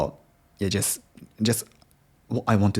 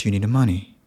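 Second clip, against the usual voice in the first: falling pitch on money; 4 dB louder than usual. Explaining British English intonation at sentence end, falling pitch on money. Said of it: "the intonation goes down at the end of a sentence".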